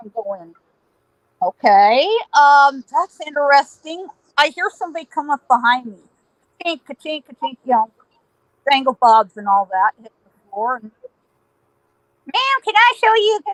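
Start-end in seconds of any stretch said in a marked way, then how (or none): 12.3-13.4 put-on nasal voice, much higher pitch. Retelling someone who came up behind them in a store, high-pitched nasal voice. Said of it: "the high-pitched, nasal voice".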